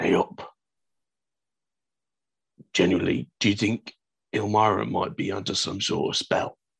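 badly hidden, clumsy, not-so-quiet stage whisper. Voicing a character leaning over to whisper a question to Hagen: clumsy, not-so-quiet whisper. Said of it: "whisper to Hagen".

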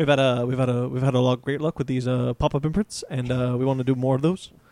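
publisher's on-stage announcer voice. Asked by a listener to quote an executive: Dan Didio voice. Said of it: "can you say it like Dan Didio?".

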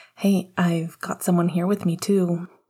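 ordinary talk

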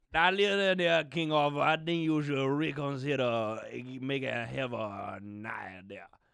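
put-on Cajun accent, character voice. The Cajun friend speaks to King Arthur, in a Cajun accent. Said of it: "my Cajun friend".

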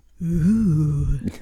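mimicked, drawn-out ooh. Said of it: "That was my Jonathan imitation".

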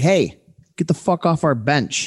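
put-on heavy, thick New York accent, laid on. Retelling a big guy popping his head out a door by the bench, new york accent. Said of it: "in the most New York accent".

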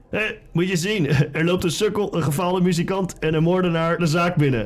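shouting voice. Narrator voicing the barman yelling at you as you stand at the bar: shouting barman. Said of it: "En terwijl je aan de bar staat, schreeuwt de barman naar je".

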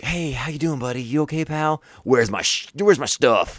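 put-on falsely sympathetic villain. Imitating a movie villain asking for his stuff: imitating a pseudo-sympathetic villain. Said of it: "pseudo-sympathetic to you".

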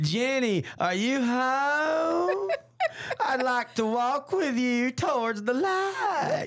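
very slow, high, creepy drawl stretching out "home". Retelling teasing the fiance in the Poltergeist II villain's voice: imitating the Poltergeist II villain. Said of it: "'Cause that's how he talks".

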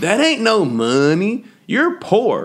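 very high-pitched, very slow, drawn-out sing-song. Retelling what a classmate said about a parent's pay: imitating a classmate. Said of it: "And she said it like that".

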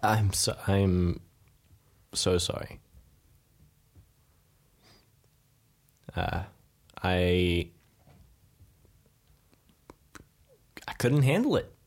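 grave, sober and very slow. Voicing a character apologizing to the group for failing: serious tone. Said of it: "he takes on a more serious tone".

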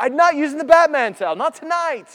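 very loud, shrill, wailing, screaming cry. Imagining himself refusing the Batman towel his wife offered, mock screaming and crying. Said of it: "I just start screaming and crying at her".

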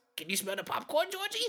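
eerie, creepy clown character voice. After a game, a player slips back into the Pennywise voice. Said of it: "the Pennywise voice".

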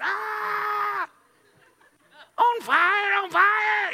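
put-on very high alarmed shriek with Ah stretched long. Retelling a kitchen fire, imitating people screaming. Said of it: "they're in there screaming".

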